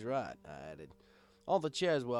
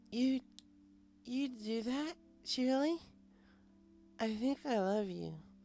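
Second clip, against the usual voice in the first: put-on very high, slow, gushing, heavily drunk voice; 13 semitones higher than usual. Narrator reads Twilight, smashed, answering Shirley's offer to walk her home: smashed drunk Twilight voice. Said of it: "but [name] was smashed. / she giggled. / but [name] was smashed. Looked like I'd be calling a cab tonight. I... Did I ever tell you guys how I... She paused to let out a particularly large hiccup".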